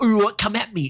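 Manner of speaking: put-on British accent. Complaining about a show, the speaker mocks a character's attitude in a mock British accent. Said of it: "I've got one of them British accents".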